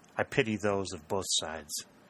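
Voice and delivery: ordinary talk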